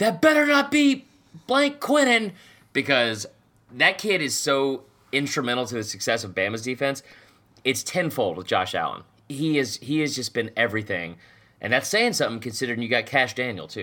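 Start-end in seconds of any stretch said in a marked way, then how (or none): 0.0-2.3 mock very high, loud, all-out holler. Retelling a yell when somebody was down on Saturday: retelling own loud yell. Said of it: "I yelled out as loud as".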